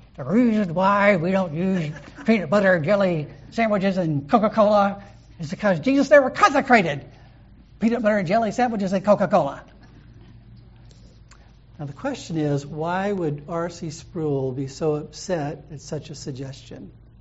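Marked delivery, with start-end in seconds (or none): 0.2-9.7 seething, words forced through clenched teeth. Retelling what a man said after a student's suggestion; retelling through clenched teeth. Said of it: "through clenched teeth".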